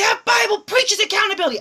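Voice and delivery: very high-pitched screaming. Retelling standing up in a pew and screaming at the pastor: retelling screaming at someone. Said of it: "I am screaming it at this pastor".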